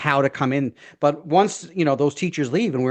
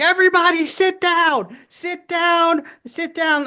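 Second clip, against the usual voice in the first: put-on very high, very slow, drawn-out shriek. Retelling how an older teacher yelled at students in the auditorium: imitating someone screaming. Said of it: "just screaming".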